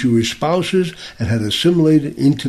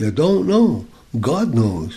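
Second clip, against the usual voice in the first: put-on quiet, soft-spoken, heavy European accent, broken English. Retelling what a man binding tefillin on him said, quiet, heavy European accent. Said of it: "quietly said to me in broken English with a heavy European accent".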